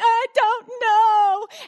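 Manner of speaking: put-on tearful sobbing, high pitched. Retelling a child's reply after being asked why she lied: imitating Avery sobbing. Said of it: "But she's sobbing".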